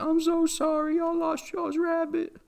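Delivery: put-on voice pitched way up, slow, on the verge of tears. Retelling a woman's reply to kids seeking a lost rabbit: imitating someone almost crying. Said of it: "almost crying".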